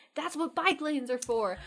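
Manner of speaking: acted-out, high-pitched, angry scolding scream. Retelling a road rage stop by another driver, imitating a man screaming. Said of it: "And he kept screaming at us".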